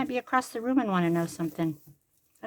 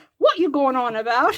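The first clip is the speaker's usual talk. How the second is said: booming, loud, fake English accent; 4 semitones higher, 9 dB louder than usual. A grandparent showing how they like to annoy their grandkids: fake English accent. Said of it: "I always pretend I'm English and I use an English accent".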